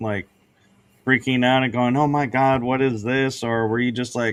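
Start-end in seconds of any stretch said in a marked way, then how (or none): none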